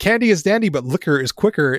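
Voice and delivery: ordinary talk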